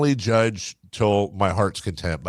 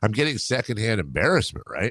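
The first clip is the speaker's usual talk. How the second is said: ordinary talk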